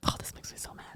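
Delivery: hushed, very quiet whisper. Reacting to a quote a listener sent in: whispering. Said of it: "I shouldn't whisper that".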